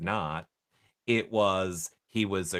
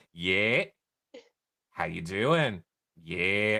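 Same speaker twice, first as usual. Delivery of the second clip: put-on Minnesota accent, slow. Acting out families answering jail calls with each other, in a Minnesota accent. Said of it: "Minnesota accent is so throughout this".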